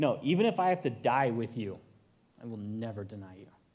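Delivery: acted, firm, earnest, resolute, heartfelt tone with conviction. Retelling the disciple Peter refusing Jesus's prediction: imitating someone speaking with conviction. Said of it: "And with such conviction".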